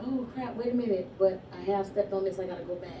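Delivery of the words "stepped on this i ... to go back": normal talking voice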